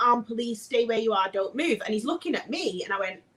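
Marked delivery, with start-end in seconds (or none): 0.0-1.8 put-on screaming. Retelling armed officers raiding the house, imitating police screaming. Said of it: "they're screaming".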